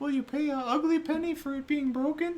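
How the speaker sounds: very high, tiny, shrill voice, loud. Asking a shopkeeper a question from under the counter: little voice. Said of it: "I like this little voice from under my counter".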